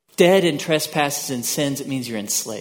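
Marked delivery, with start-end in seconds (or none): none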